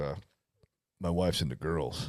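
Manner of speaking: very deep, very soft, hushed murmur. Retelling a college friend talking about his wife, imitating friend's deep voice. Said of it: "He's got a real deep voice".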